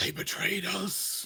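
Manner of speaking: high, eerie, haunting voice with echo. Voicing a creature emerging from the ceiling, in a haunting echoing voice. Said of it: "it too echoes with a haunting voice".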